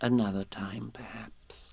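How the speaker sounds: comforting tone. Narrator reads a story, one character consoles a sad friend, comfortingly. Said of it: "said Piglet comfortingly".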